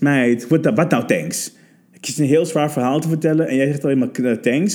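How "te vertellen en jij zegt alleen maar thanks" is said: ordinary talk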